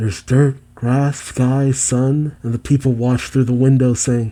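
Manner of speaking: ordinary talk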